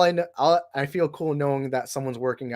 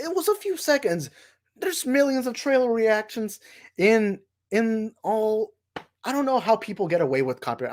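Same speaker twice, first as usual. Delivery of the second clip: pissed-off, fed-up angry venting; 7 semitones higher than usual. Speaking to viewers after a copyright claim, getting pissed off. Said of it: "I'm sorry if I'm getting pissed".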